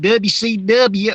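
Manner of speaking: put-on Southern accent, very slow and drawn out. Speaker mimics how people always say W C W: faux Southern accent. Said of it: "they always throw in like this faux Southern accent".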